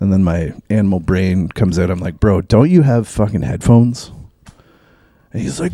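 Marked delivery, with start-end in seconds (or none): 2.2-4.1 put-on sarcastic retort tone. Retelling what they said to a man playing loud music on a bus, retelling a sarcastic retort. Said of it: "That sounded like a sarcastic bitch brain".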